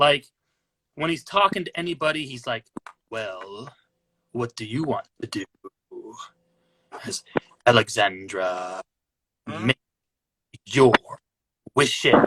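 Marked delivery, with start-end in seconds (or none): 3.1-12.1 really deep, slow drawl, sentences stretched way out. Describing how a man talks to anybody, the speaker imitates him: imitating his really deep voice. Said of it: "He's got that really deep voice".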